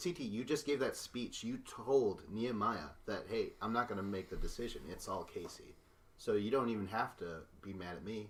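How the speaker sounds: ordinary talk, nothing marked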